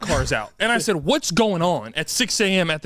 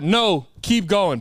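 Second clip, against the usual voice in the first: stern, firm, authoritative voice. Retelling how the police waved the driver on: imitating a stern cop. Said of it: "they said it's stern".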